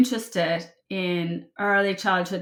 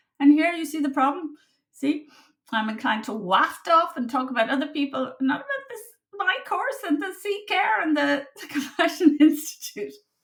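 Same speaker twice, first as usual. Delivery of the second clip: high, giggly laugh-talk, speaking through the giggles; 9 semitones higher than usual. A tired speaker drifts off topic and starts laughing, laughing while talking. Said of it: "I'm just laughing now".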